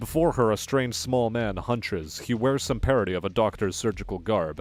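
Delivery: ordinary delivery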